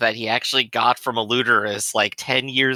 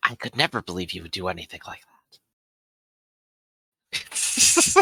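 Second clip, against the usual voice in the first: hushed whispering, lower pitch; 4 semitones lower than usual. Speaking in character to the little kids, whispering. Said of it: "I'll whisper to like the y- little kids".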